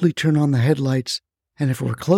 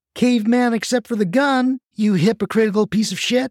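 high, raised, angry shout; 7 semitones higher than usual. Gwen, after kicking the bearded man, shouted at him. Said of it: "shouted Gwen".

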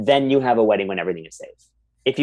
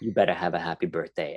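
put-on threatening New Jersey accent, lower and quieter; 5 semitones lower, 8 dB quieter than usual. Retelling a birthday cameo message: imitating Caroline Manzo, threatening.

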